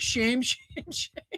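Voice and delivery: soft, breathy whisper, cracking up laughing mid-word. Repeating a claim that protesters practice shouting, the speaker can't help laughing. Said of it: "I can't even say it without laughing".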